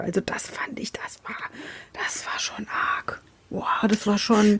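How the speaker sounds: hushed whisper. Speaker telling the others about watching a show: whispering. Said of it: "ich find's geil, wie du flüsterst".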